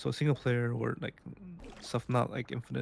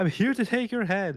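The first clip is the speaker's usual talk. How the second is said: mock boastful villain voice, higher and louder; 8 semitones higher, 6 dB louder than usual. Retelling how game generals introduce themselves: imitating an egotistical game general.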